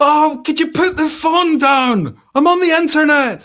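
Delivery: mock yelling, high and loud.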